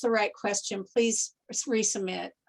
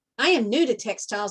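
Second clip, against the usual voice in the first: plain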